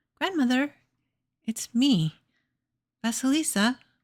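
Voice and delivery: tiny, timid, very small high voice. Narrator reads Vasilisa answering the Baba Yaga at the door, in Vasilisa's very small voice. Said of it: "she spoke up in a very small voice".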